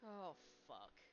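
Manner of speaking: muttered under the breath. Voicing a character reacting to news of a location: muttered under breath. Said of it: "You hear Liam say under his breath".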